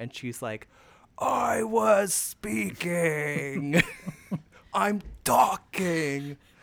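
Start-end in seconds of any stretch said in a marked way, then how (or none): 1.2-6.4 very slow, drawn-out, raised, hard mafia tough-guy voice. Retelling how Joy cut back in after Megan, imitating Joy's mafia voice. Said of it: "it really was like her mafia voice".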